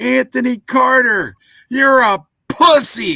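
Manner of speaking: very loud, very high, very slow drawn-out yell. Retelling a yell from the stands: imitating Bronk yelling as loud as possible. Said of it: "as loud as possible".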